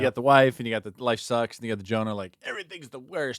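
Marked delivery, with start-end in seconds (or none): 2.4-3.4 mock despair, higher pitch. Voicing Tobit's prayer of despair to the other speakers: imitating a despairing complaint. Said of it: "I like the tone of voice you use on that".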